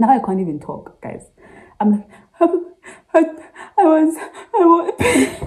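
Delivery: very high talk breaking up with laughter. Speaker telling viewers a story about calling his dad, laughing while talking. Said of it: "I'm laughing now".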